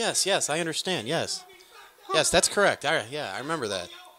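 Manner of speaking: courteous, polite, agreeable tone throughout. Imitating a man who keeps politely agreeing: imitating polite agreement. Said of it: "He's so polite".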